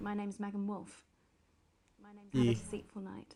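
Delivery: put-on posh voice. Speaking in character before dropping it: posh gobshite's voice. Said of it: "doing this posh gobshite's voice".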